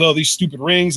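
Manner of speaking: normal talking voice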